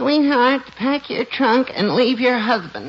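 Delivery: ordinary delivery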